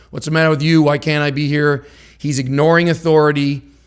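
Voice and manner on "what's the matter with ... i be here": normal talking voice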